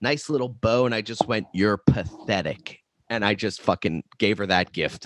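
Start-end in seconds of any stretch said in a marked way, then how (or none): 1.5-2.8 put-on nasty, insulting tone. Retelling a fight with a girlfriend: retelling a vulgar insult. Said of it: "I just said it with such vulgar".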